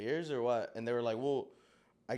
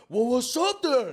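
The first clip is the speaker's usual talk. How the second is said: put-on drunk voice, higher and louder; 11 semitones higher, 10 dB louder than usual. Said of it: "Super drunk".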